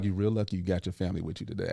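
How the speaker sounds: very low, hushed half-whisper under the breath. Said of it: "and I whispered it to him".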